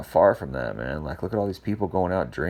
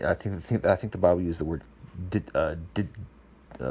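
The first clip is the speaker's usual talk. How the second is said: stuttering, stammering speech; 3 dB quieter than usual. Talking about a bible verse and searching for a word, stuttering. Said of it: "I'm stuttering right now".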